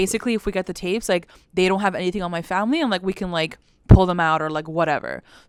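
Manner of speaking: plain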